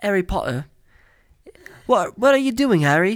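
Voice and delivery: loud, high-pitched mock British accent.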